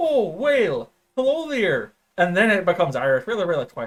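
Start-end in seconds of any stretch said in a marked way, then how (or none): 0.0-1.9 slow, swooping, sing-song put-on Midwestern accent. Speaker shows how their accent impression starts before it turns Irish: Midwestern accent. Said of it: "it always starts Midwestern".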